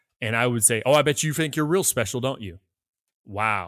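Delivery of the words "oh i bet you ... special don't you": mocking, snide, sarcastic tone. Acting out a reply to someone who says what they did: imitating a sarcastic tone. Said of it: "it's the sarcasm in our brain".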